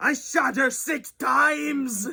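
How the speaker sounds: very high, pitched-way-up put-on character voice. Reviewing a horror movie, a speaker acts out the character shooting Jamie: Loomis impression. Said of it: "my impression of Loomis".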